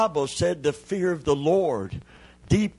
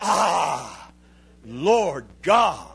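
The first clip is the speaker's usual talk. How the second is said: reverent, wonder-struck, awed cry, long drawn-out ah. Explaining Jeremiah's words, acting out his awe before God. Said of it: "he's standing in such awe of God".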